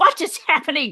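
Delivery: put-on high, angry, confused, indignant voice. Retelling being shocked by a device, imitating being angry. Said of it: "I was actually kinda, like, angry".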